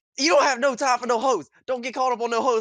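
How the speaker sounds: loud, high-pitched yelling. Retelling what Hunter yelled during an argument: imitating Hunter yelling. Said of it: "Hunter was yelling at me like".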